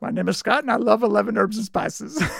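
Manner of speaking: fumbled words with a creaky, raspy voice. Scott asks to hear a phrase, so mimic him with a bad Colonel Sanders impression. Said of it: "That was your worst impression".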